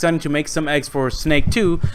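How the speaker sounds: ordinary delivery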